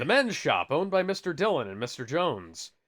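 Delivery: ordinary delivery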